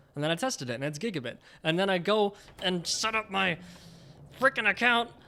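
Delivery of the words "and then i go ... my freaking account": heated, exasperated, angry, pitched-up rant. Complaining about the new apartment, yelling angrily. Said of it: "Sorry, I'm yelling again".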